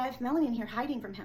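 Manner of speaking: ordinary talk, nothing marked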